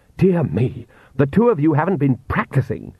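ordinary delivery

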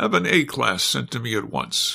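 ordinary delivery

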